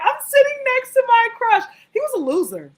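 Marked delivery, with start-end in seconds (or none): 0.0-1.6 acted, thrilled, very high, pitched-up excited voice. Retelling being seated next to a crush: retelling own excited words. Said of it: "and I was so excited".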